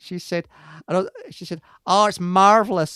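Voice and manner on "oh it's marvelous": terrible put-on American accent, raised. Quoting an American woman about coats, in a terrible American accent. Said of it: "sorry, it's a terrible American accent".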